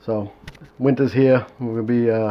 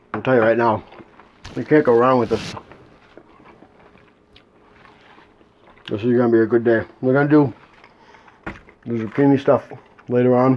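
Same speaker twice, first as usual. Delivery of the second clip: speaking with mouth full of food. Tasting food on camera, talking with mouth full. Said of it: "to talk with my mouth full here".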